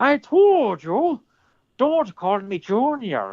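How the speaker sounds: very slow, very high, drawn-out Irish accent. Doing a movie quote after being asked for an irish accent: irish accent. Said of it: "do it in an Irish accent".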